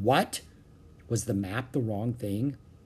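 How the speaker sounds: ordinary delivery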